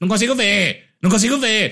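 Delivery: mock high, fussing old-lady voice calling out. Retelling an old woman yelling in the cinema: imitating an old woman yelling. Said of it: "A véia ficou a porra do filme inteiro".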